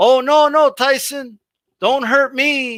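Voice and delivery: mock, very slow, high, drawn-out, dripping-sarcasm plea. Retelling the dude's reply to Tyson's message: imitating a sarcastic plea. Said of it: "Like, all sarcastic".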